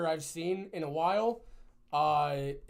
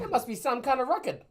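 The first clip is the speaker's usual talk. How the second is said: put-on raised, high, belted-out Boston accent; 8 semitones higher, 5 dB louder than usual. Repeating a remark the way Rosie O'Donnell says it, in a Rosie O'Donnell impression. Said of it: "That's the way Rosie O'Donnell says it".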